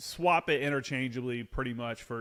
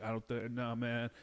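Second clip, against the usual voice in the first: mock nervous, upset protest, quieter; 6 dB quieter than usual. Retelling a soldier who didn't want to deploy, imitating a nervous, upset soldier. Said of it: "super nervous about the deployment".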